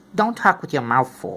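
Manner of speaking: plain reading voice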